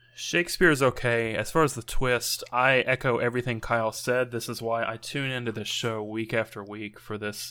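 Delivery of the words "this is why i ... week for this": plain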